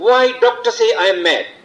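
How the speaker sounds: high-pitched, loud shouting. Retelling a man in a hospital lift: imitating a man shouting. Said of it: "started shouting".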